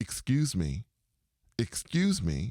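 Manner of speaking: play-acted, firm, clear, slow, stern call. Retelling what someone walking down the steps called out, retelling a stern voice. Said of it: "they had a kind of a t- stern voice".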